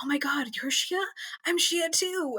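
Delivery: secretive, very hushed, high whisper. Speaker recounts meeting another girl at an event, reenacting hushed whispers. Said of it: "in very hushed whispers".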